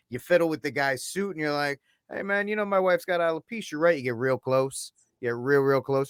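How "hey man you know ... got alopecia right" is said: put-on old-school gangster voice, Irish or Italian. Suggesting how to confront a man on stage, old Irish or Italian gangster voice. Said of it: "You do it the the old Irish or Italian gangster way".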